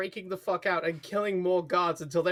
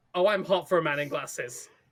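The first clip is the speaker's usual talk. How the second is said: ordinary talk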